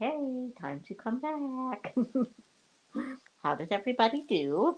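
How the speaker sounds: very quiet, gentle, soothing, slow voice. Calling everyone back after a break, nice, soothing voice. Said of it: "trying to have a nice, soothing comeback voice".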